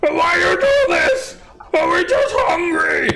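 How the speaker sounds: panicked yelling, giant voice. Narrator voicing a panicked hill giant yelling out, panicked yelling as giant. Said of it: "Yelling out in giant".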